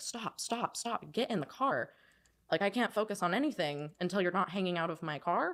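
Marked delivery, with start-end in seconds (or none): 0.0-1.9 put-on screaming, high and stretched out. Retelling a passenger hanging out of the moving car: imitating own screaming. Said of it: "just screaming".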